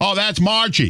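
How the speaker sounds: mock yelling voice. Retelling the answer from someone at the front: imitating someone yelling. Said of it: "Yelling for him".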